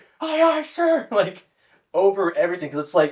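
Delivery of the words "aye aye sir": mock, very high screamed call-back. Retelling what was heard outside the San Diego airport, imitating recruits screaming. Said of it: "all we can hear is just screaming".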